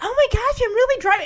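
put-on excited gush, pitched very high. Retelling how a new driver sounded behind the wheel: imitating someone excited. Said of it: "she's so excited".

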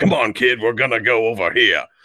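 rough, gruff, hard-boiled cop voice. Describing how a character's voice should sound, doing a gruff detective voice. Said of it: "Like very more gruff voice".

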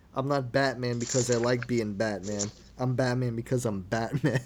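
ordinary talk, nothing marked

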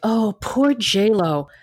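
patronizing, condescending, pitying, sympathetic tone. Mocking how people talk about a celebrity: imitating condescending pity. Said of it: "it's so condescending to me".

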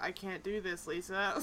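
empty, emotionless, flat, vacant, very slow reading. Retelling how a character said a line: imitating a flat vacant delivery. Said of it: "just says it in that same scary, like, vacant expression".

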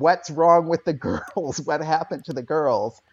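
put-on high-pitched yelping scream. Retelling a fall on the stairs while a mother screams: imitating a mother screaming. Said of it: "my mother is screaming at me".

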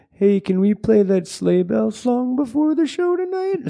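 mock bashful, sheepish voice. Retelling a request before the show, imitating Brendo asking sheepishly. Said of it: "sheepishly went".

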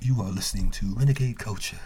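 joking, playful half-whisper into the mic. Podcast host opening the show in a joke voice: joke half-whisper. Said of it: "why are you whispering on the mic".

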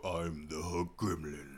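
very low, deep, hushed, slow, drawn-out voice. Imagining the hook gremlin's line with a deep voice: deep voice. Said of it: "What if he had a deep voice?".

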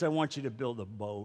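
voice dropped very low and soft. Telling the Noah story, God speaks to him, God voice. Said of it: "That was my God voice".

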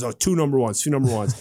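ordinary talk

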